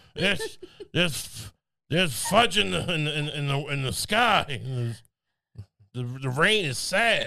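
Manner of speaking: put-on babbling, rambling crazy old man voice, stumbling over words. Acting out a village elder asked about the drought: crazy old village man voice. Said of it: "the crazy old man in the village".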